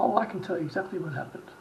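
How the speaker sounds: ordinary delivery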